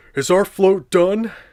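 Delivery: loud, high-pitched cartoon voice. Reading a SpongeBob book aloud, voicing Patrick: Patrick voice. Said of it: "asked Patrick".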